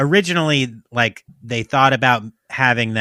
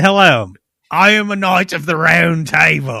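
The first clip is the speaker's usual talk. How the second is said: loud, put-on Australian accent; 4 semitones higher, 5 dB louder than usual. The speaker plays a knight of the round table, in an australian accent. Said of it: "why is it always an Australian accent?".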